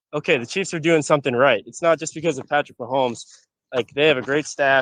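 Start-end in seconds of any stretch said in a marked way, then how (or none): none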